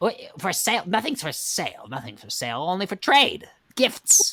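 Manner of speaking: high witch voice. Describing a scene from Spirited Away, the speaker performs a Baba Yaga witch voice. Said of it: "like a Baba Yaga".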